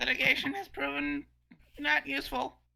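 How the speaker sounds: put-on cartoon character voice. Speaking in character during a game, sounding like Lemon Grab. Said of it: "you sound like Lemon Grab".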